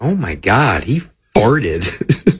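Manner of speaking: American accent impression. Speaker acting out what people say, in an american accent impression. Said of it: "I like his American accent".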